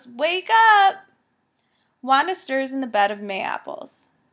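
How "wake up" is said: very loud, high, full-throated bellowed shout. Reading a story, a narrator voices a man shouting for Wanda to wake; bellowing. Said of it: "He bellows".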